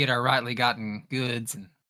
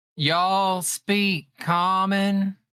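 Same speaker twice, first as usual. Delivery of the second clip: loud, pitched-up, deliberately slowed speech; 7 semitones higher than usual. Voicing a character asking rocks if they understand: louder and slower speech. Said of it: "she's gonna talk, like, a little louder and a little slower".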